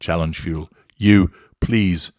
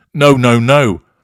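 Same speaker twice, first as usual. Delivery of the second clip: high, raised, insistent, pushing-back tone; 6 semitones higher, 9 dB louder than usual. Narrating an incident between a narcissist and a victim, voicing the victim protesting. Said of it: "protests the victim".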